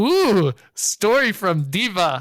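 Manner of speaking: very slow, rapt, enthralled, drawn-out ooh. Playing Gundrik as an NPC offers to tell the story: enthralled. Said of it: "Gundrik is enthralled".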